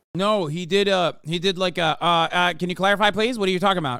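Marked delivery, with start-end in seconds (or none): 2.1-4.1 put-on deadpan cartoon voice, faster pace. Retelling how a student answered a question, mock-deadpan Eric Cartman voice. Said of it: "he replied like Eric Cartman deadpan".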